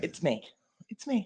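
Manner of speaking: very soft voice. Testing a microphone for another speaker: very soft voice. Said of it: "you got a very soft voice to you this morning".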